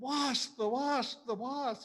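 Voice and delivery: play-acted, very high, drawn-out scream. Retelling how a man swatting at a wasp reacted: imitating someone screaming. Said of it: "he started screaming".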